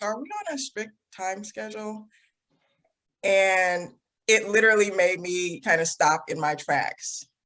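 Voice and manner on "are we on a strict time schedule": very quiet, soft, offhand and nonchalant. Retelling a friend's question after the speaker kept screaming; imitating a nonchalant tone. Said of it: "he just said it very like nonchalant".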